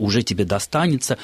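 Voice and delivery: plain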